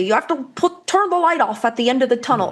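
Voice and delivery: rough, attempted Irish accent. Quoting an old irish soccer coach's saying: attempted irish accent. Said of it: "I can't do an Irish accent".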